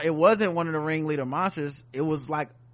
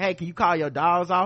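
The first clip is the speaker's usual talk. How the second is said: usual speaking voice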